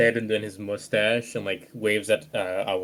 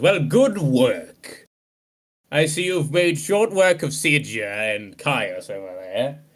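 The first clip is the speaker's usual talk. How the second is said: acted annoyed, irritated character voice; 4 semitones higher, 4 dB louder than usual. Voicing General Tullius responding to the party: annoyed General Tullius. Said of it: "General Tullius looks annoyed as he responds".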